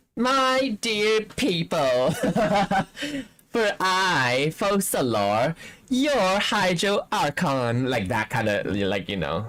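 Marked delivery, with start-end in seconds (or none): 0.2-7.9 very slow, drawn-out, spoiled, bratty, grand voice. Imitating how Focalors addresses her people: bratty Focalors voice. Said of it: "her, like, bratty self".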